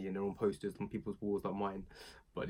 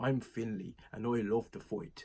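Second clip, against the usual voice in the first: deliberately bad, put-on Irish brogue; 2 semitones higher than usual. Joking about a wrestler's nickname, imitating Fit Finlay in an Irish accent. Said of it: "excuse that Irish accent".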